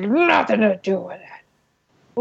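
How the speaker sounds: slow, growly and rough-edged voice. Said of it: "his voice gets all growly".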